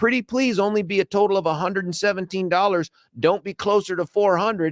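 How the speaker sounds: high-pitched, hopeful, fingers-crossed pleading. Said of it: "I just cross my fingers and go".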